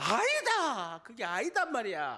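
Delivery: Busan dialect, high tone throughout, swooping. Explaining features of Busan dialect: high-toned Busan dialect. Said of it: "부산 사투리 특징은 있어요. 하이톤이에요".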